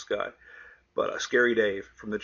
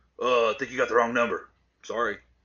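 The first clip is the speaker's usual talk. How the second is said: rough, gruff voice; 3 dB louder than usual. Retelling a wrong-number phone call, the stranger answering: imitating a gruff voice. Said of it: "a gruffy voice on the other end goes".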